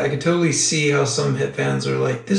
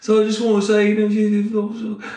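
bad put-on British accent, pitched up; 6 semitones higher than usual. Retelling what a British pilot said on a Fourth of July flight: shitty British accent. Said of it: "that's my shitty British accent".

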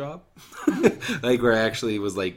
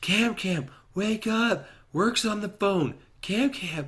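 acted out, very high, shrill shrieking scream; 11 semitones higher than usual. Retelling a call screamed down the stairs: imitating someone screaming. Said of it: "she screams down the stairs".

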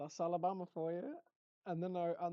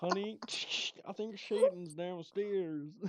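loud cartoon frog puppet voice; 5 dB louder than usual. Acting out a dad telling his wife someone is downstairs, in a Kermit the Frog voice. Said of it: "why does he sound like Kermit?".

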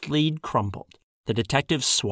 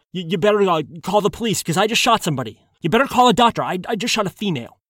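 high-pitched babble, words tumbling out; 6 semitones higher, 4 dB louder than usual. A gunman running into the hallway babbles to a co-worker who came to investigate. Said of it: "The man babbled".

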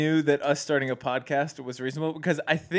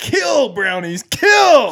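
very loud, high, urging battle yell; 8 semitones higher, 11 dB louder than usual. Describing someone urging on the Browns defense, retelling a yell. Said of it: "and he's like yelling it".

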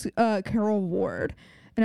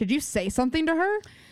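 pointed, accusing tone, pitched up; 5 semitones higher than usual. Retelling how Emily questioned Dr. Sullivan, imitating an accusatory tone. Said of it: "The accusatory nature of that tone".

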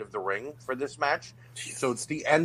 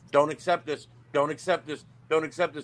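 ordinary delivery

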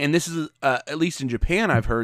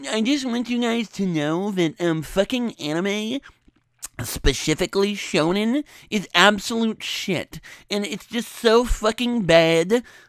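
high, slow nerdy voice; 7 semitones higher than usual. Imitating how anime fans online sound: imitating an anime fan online. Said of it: "every fucking weeb on the internet sounds just like".

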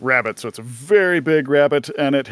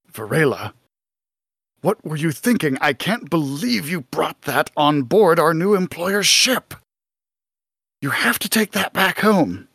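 private, hushed, kept-down reproachful tone; 2 semitones higher than usual. Describing an overheard scene, voicing Malin talking to Varela in a hushed tone. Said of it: "he's talking in kind of a hushed tone".

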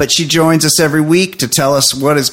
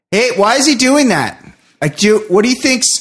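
mock loud voice, higher pitch; 9 semitones higher than usual. Retelling how a soft-spoken friend talks at the movies: imitating loud talking. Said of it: "unless you happen to be in a movie theater".

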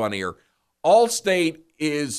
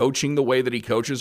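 ordinary delivery

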